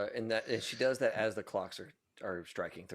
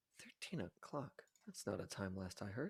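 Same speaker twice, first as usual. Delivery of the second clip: very soft, very quiet mutter under the breath; 2 semitones lower, 13 dB quieter than usual. Voicing a character reacting to the clock striking thirteen: muttered under her breath, not hushed. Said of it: "just kind of under her breath, not trying to keep it quiet".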